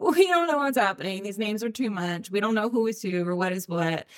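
normal talking voice

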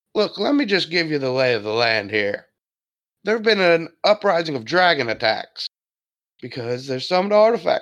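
put-on aged man voice. A game master voices an older man for the players, older man character voice. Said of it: "There's one man you see here, an older man. / There's one man you see here, an older man. He's kind of wearing a green tunic. He has a cane that he leans on. / an older man. / an older man".

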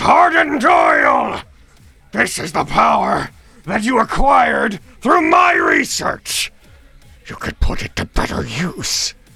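shouting. Narrating a character who sweeps down at his opponent and yells. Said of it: "sweeps down and just yells".

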